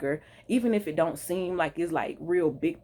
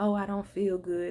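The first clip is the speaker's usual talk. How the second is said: timid, meek, feigned feeble complaining voice; 3 semitones higher than usual. Describing someone faking feeling unwell as a distraction; mock low, meek voice. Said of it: "that low, meek voice".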